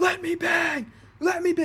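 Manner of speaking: shrill, very high, loud yell. Retelling a crazy funny video of a man punching the walls, imitating a man yelling. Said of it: "him just yelling".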